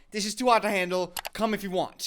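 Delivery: ordinary delivery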